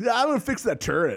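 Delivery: very high, loud surfer-dude voice. Imitating a rebel soldier's line from the game: imitating a surfer dude. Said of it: "he was such a surfer dude".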